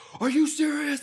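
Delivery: put-on very high, frantic, disbelieving outburst. Telling how their team didn't win, the speaker acts out a buddy freaking out. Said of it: "he started freaking out".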